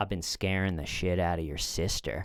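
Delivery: hushed, quiet, low muttering under the breath. Retelling what a drunk guy said as the brother turned away, quiet voice. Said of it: "in a quiet voice".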